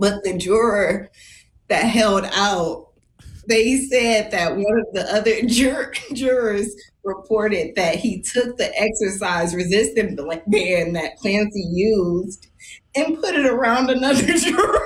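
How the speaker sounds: speaking while barely suppressing giggles. Retelling what a juror reported, trying not to laugh. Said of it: "I'm going to try to say this without laughing again".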